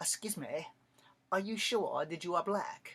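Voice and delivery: put-on heavy, very thick English accent throughout. Retelling what a woman from England asked him, in a thick English accent. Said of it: "She had a very thick English accent".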